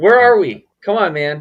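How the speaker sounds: shouting. Joking with another speaker about being at Altus, yelling. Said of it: "Why you gotta yell, dude?".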